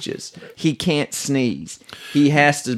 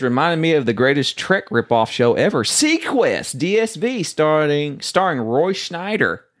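usual speaking voice

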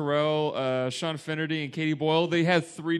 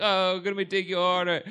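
plain

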